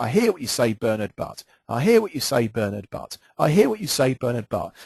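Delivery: plain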